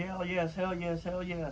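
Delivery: mock excited repeated yelling at top of voice. Retelling jumping from a chair when a name landed: retelling own excited yelling.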